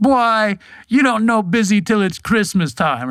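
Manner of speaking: very high put-on Jamaican accent. Quoting a jamaican coworker from a busy job, imitating a jamaican accent. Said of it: "better Jamaican accent than I can do".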